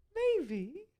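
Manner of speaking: very high, sing-song, cutesy little voice. Answering a question about hamsters hidden in the game: very cute voice. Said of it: "That was also a very cute voice there".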